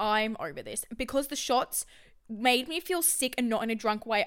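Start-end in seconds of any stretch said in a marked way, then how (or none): none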